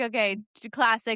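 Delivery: plain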